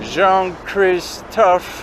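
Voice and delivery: put-on old, high, slow, drawn-out American accent.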